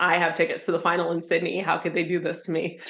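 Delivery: ordinary talk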